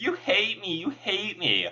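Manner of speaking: high, swooping character voice. Imitating a character's repeated line: voice like a Wish on a Star character. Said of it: "I sound like freaking the one character from, uh, Wish on a Star".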